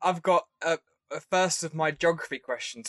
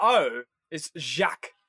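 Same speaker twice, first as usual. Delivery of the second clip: plain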